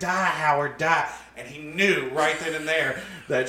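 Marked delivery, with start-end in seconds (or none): 0.0-1.1 put-on wild, all-out scream at full volume. Retelling his dad's story of her stomping a windshield in, imitating someone screaming. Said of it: "as she was screaming".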